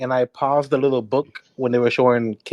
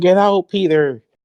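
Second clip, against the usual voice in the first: mock shrill, loud, high-pitched full-on screaming; 5 semitones higher, 5 dB louder than usual. Retelling a film scene where a character screams at Peter: imitating someone screaming. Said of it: "screaming, like".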